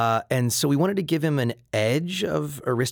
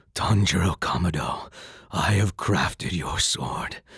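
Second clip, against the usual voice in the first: put-on very deep voice, lower, slower; 6 dB louder than usual. Imitating the Japanese actor's serious character line to Tanjiro, in a very deep voice. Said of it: "So his voice is way down here".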